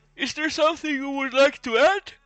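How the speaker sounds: talking through a yawn. Wrapping up, asking the other person if they want to add anything: yawning while speaking. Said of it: "sorry, I'm yawning".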